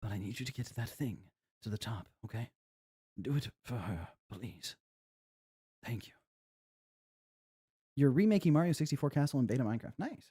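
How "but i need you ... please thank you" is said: put-on soft, wizened elderly grandfather character voice. Voicing a game character's dialogue with no direction given: wizened old grandpa voice. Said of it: "I'm gonna go with the wizened old grandpa".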